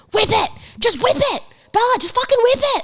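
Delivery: mock very high, screamed, pushy urging tone. Retelling being told what to do while shading a tattoo: imitating people screaming. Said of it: "screaming at me when I was trying to do the shading".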